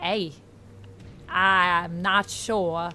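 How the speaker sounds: attempted Australian accent drifting into Southern. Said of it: "Now I'm becoming Southern".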